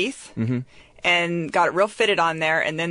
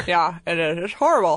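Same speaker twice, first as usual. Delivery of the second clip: muffled speech, as with something in the mouth. Agreeing with another speaker while wearing a mouth guard: talking with a mouth guard in. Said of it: "you sound like Owl in Winnie the Pooh".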